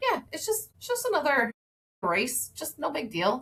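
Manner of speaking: put-on nonchalant tone. Retelling a teenage daughter's reply about doing an Ironman: imitating a super nonchalant reply. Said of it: "super nonchalant".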